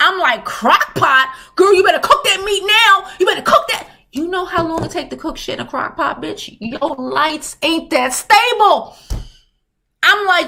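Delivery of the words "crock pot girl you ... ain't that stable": mildly scolding half-yelled voice. Retelling yelling at a woman's crock pot cooking video: retelling a scream. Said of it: "I'm screaming at her like she could hear me".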